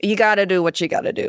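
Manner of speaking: put-on broad New York accent. Quoting a line from the episode: C J Craig broad New York accent. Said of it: "as a broad New York accent".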